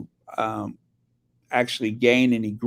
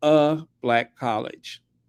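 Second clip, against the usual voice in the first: slow, emphatic, heavy stress on A.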